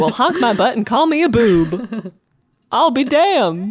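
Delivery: put-on old-fashioned folksy exclamation with drawn-out boob. Joking about a phrase that sounds old-timey, saying it in an old-timey exclamation voice. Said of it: "That sounds like an old-timey expression".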